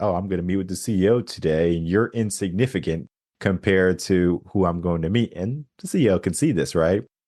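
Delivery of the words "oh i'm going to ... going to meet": usual speaking voice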